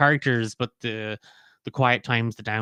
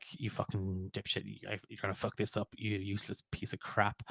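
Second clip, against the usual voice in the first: contemptuous muttering whispered under the breath; 12 dB quieter than usual. Retelling how an actor muttered at a character she despises, retold muttered insults. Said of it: "would be muttering awful things under her breath".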